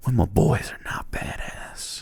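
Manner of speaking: hushed voice. Acting out whispering encouragement to the wounded after a battle: whispering. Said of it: "Gotta whisper so they don't know".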